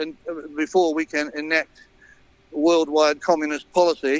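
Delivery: ordinary talk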